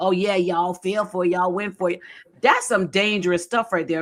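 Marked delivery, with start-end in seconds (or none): 0.0-2.0 mock gloating, smug taunting tone. Retelling a woman rubbing it in to everyone who fell for it: imitating a gloating taunt. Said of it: "But she she shoved it".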